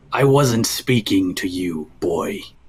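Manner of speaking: sudden, angry, violent snap. Narrating a mask that suddenly turns on the listener, angry violent snap. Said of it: "angry, violent. There's a quick sudden".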